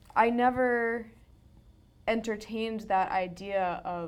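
normal talking voice

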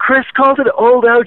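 very high yelled call. Retelling what a girl yelled out in the hallway, retelling a yell. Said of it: "she just yelled out in the hallway".

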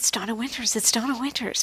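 soft crowd half-whisper, repeated under the breath. Acting out a crowd spotting a star: imitating a crowd half-whispering. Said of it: "the crowd is whispering".

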